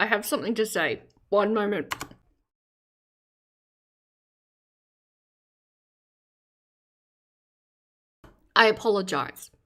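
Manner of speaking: speaking with food in mouth. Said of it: "I have food in my mouth".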